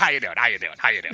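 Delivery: very low, fast, silly, stupid little put-on voice. Describing a man's habits and imitating his greeting; stupid little put-on voice. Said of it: "the stupid little voice".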